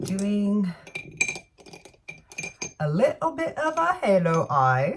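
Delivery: slow, slight fake British accent. An unplanned suggestion slipping into a little fake British accent. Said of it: "A little fake British accent or something. Maybe that was Scottish".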